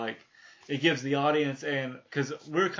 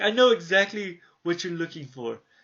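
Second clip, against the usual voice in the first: put-on raised, proper British accent; 4 semitones higher, 6 dB louder than usual. Describing the librarian Giles in a show, quoting him again in Giles's proper British accent. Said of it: "British and proper".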